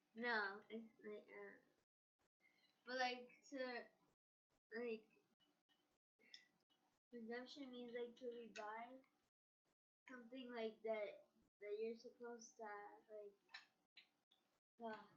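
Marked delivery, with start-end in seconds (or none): 2.9-13.4 indistinct rambling mumble, words running together. Speaker fumbling to define a word for a questioner, mumbling. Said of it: "You're mumbling".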